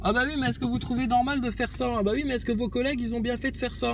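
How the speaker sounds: high, soft mocking voice.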